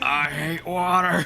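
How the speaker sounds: high grumbling tone. Voicing a character making his way through water: complaining. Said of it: "a bunch of complaining".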